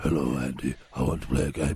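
very deep, low put-on voice. Showing the others a low noise: very deep low voice. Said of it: "But I was going deeper than that".

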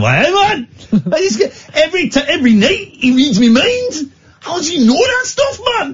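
put-on Newcastle voice, very high. Imitating a listener from Newcastle tweeting in: put-on Newcastle accent. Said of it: "I'm doing my Newcastle, um, Newcastle accent".

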